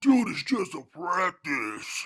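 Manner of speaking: real big, loud caveman voice. Retelling the boyfriend's words, in his big caveman voice. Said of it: "He put on his real big caveman voice".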